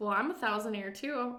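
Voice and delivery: ordinary talk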